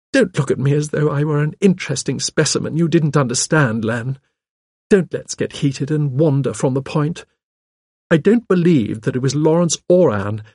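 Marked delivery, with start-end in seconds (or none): none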